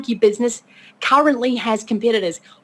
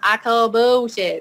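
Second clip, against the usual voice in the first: badly done, fake Southern accent. Recapping a scene, quoting a man's reply in a bad southern accent. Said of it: "he says it in that beautiful Southern accent".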